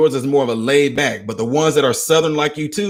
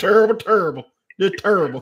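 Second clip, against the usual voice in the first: put-on country accent, a bit higher in pitch; 5 semitones higher than usual. Echoing the husband's phrase as a famous sportsman would: Charles Barkley impression. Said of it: "He sound like Charles Barkley then".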